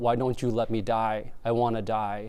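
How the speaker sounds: ordinary talk, nothing marked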